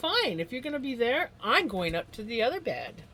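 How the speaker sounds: pet voice. Voicing the pet's thoughts as he finds his spot taken: voicing Vinny. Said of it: "He's like".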